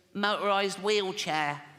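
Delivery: put-on little boy voice. In a joke, a father asks little Timmy what he wants for Christmas, little Timmy voice. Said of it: "I promised Jane I wouldn't do the voice".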